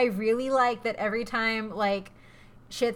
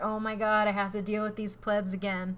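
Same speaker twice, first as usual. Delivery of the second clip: normal talking voice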